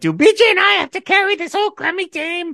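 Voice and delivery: mock, very high, top-of-the-lungs screaming. Retelling a speech where Margaret screams at the team: imitating Margaret screaming. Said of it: "she starts screaming at the top of her lungs".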